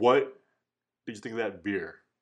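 attempted very deep, low voice, falling short. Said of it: "I can't do a Xerxes voice".

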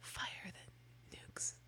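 barely audible, very quiet, breathy whisper. Showing how a whisper could be a disaster: whispering. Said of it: "like if I'm whispering".

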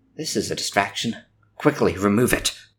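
hushed stage whisper, spoken as an aside. A player's character addresses another character in the game, hushed voice. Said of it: "say in a hushed voice".

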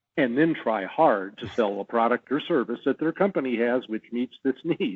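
ordinary talk, nothing marked

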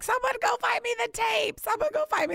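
mock, shrill, very high-pitched scream. Recalling wrapping the presents: retelling own screaming. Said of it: "I was screaming like".

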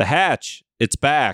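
dry, flat, expressionless deadpan delivery. Mocking a poorly written TV line: imitating Juliet's deadpan delivery. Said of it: "she delivered it so deadpan, so flat".

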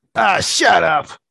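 angry tone. Acting out a reply to the voices in a scene: angrier voice. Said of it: "reply back in a more angrier voice".

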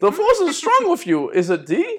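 very high-pitched voice with big swoops. Talking to the two dogs: Yoda voice. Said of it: "like when we talk like Yoda".

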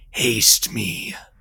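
deep put-on voice. Showing how it would word the command, in a very deep voice. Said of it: "in its uh very deep voices".

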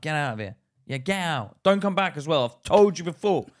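put-on very rude man voice. Retelling how a man ran off another tramp, imitating a very rude man. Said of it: "He was very rude to the other Tramp".

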